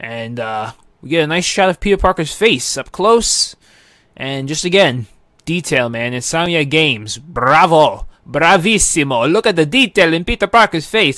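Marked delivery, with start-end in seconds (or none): 7.2-9.3 joking put-on Italian accent. Praising the game's detail while watching a trailer: put-on Italian accent. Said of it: "I developed an Italian accent".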